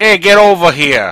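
loud, high-pitched Boston accent. Giving an example of an accent that would give someone away: Bostonian accent. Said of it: "or Bostonian accent, like".

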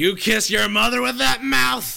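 put-on very high, loud, rough, belligerent drunken bark. Voicing a drunk patron squinting at the player: drunk character voice. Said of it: "He's drunk".

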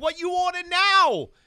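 shrieking scream, very high and very loud. Retelling how the lady at the place down the road greets customers, retelling a scream. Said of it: "She screams at you".

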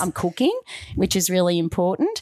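usual speaking voice

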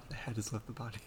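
very quiet, low mutter under the breath. Joking about a character taking off his hat, Jigen muttering quietly. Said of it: "He mutters that quietly every time he takes it off".

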